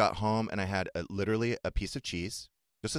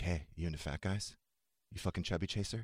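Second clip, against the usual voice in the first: put-on creepy voice, much lower, quieter; 3 semitones lower, 7 dB quieter than usual. Retelling a joke said to someone last night: mock-creepy delivery. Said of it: "It's so creepy the way you say it".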